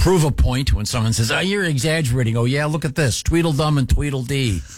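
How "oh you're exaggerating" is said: put-on girly woman's voice. Explaining why they took a photo, quoting someone's reply in a chick impression. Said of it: "That was a good chick impression".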